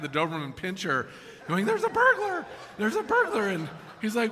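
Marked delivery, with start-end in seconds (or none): 1.6-3.5 tiny, very high little parrot voice. Telling a joke, voicing the parrot that calls out: little parrot voice. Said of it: "this little parrot sitting on the back".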